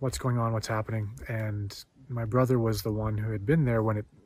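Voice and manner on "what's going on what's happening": usual speaking voice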